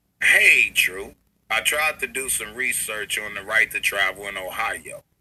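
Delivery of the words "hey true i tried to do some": ordinary delivery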